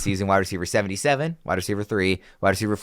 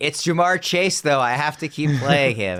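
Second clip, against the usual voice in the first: stubborn, high-pitched screaming insistence; 7 semitones higher, 3 dB louder than usual. Mocking another speaker's stubborn pick with an imitation: imitating Fitz screaming. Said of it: "just screaming".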